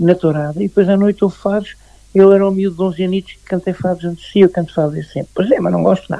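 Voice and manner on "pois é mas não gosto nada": put-on old woman voice. Retelling what a lady said to him back then, in an old woman voice. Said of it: "com uma voz de velha".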